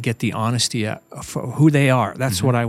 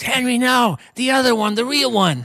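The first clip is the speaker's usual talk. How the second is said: put-on, shrill, very high-pitched scream; 12 semitones higher than usual. Retelling a wedding moment, telling Henry to go elsewhere: imitating Aunt Harriet screaming. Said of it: "she screams".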